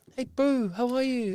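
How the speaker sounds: put-on tiny, very high little-kid toddler voice. Teasing the other speaker about how they talked at three and a half, imitating it. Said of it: "I did not talk like that".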